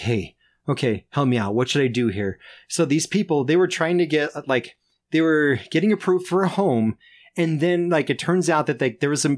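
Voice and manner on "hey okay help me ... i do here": mock-nervous speech, lower. Retelling what a coworker asked on a shared shift, imitating nervous speech. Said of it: "all nervous".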